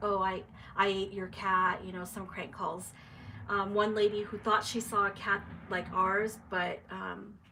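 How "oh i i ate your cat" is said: usual speaking voice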